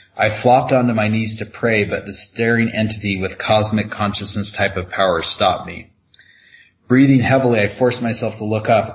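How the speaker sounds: ordinary delivery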